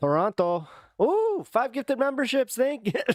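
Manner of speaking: put-on full Canadian accent, pitched very high. Streamer thanking a viewer for gifted memberships, slipping into a full Canadian accent. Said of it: "I just went into a full Canadian accent there".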